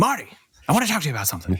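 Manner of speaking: animated character voice, pitch swinging wide and high. Speaker retries the voice after the listener approves, doing a Christopher Lloyd voice. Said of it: "That was my Christopher Lloyd voice".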